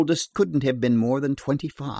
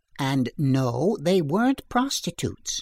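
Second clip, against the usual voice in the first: ordinary delivery, nothing marked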